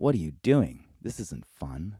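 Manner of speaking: normal talking voice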